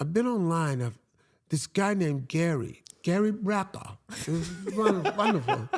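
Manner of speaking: put-on English accent. Retelling what she said about finding gary online: put-on english accent. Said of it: "I like the accent".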